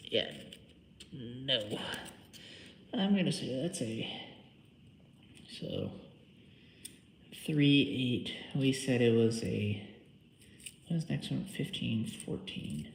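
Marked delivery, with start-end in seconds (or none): 1.1-12.9 mumbling half to oneself. Working with a feeler gauge and trying to remember a number: mumbling. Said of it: "I'm just mumbling over here".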